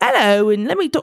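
horrible, clumsy put-on British accent. Retelling a job interviewer's greeting, bad british accent. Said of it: "I'm horrible with the accent".

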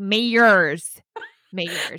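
imitated American pronunciation. Quote how she repeated the word to a man who misheard it, in a put-on american accent. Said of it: "When she says it in her American accent".

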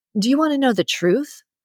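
defiant, challenging, high-pitched tone. A child confronts their dad with a question, asking defiantly. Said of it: "i asked defiantly".

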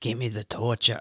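put-on gentle New York accent. Imagining a couple in the audience reacting to the ending, in a New York accent. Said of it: "Why do I sound New York?".

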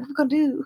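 high, hushed, half-whispered voice. Retelling how the people inside half-whispered at the door: imitating someone half-whispering.

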